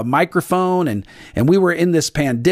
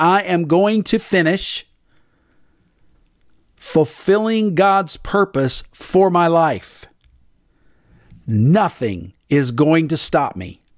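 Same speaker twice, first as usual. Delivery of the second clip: very slow, resolute, determined delivery. Leading listeners to repeat a declaration aloud: said with determination. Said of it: "I hope you said that with determination".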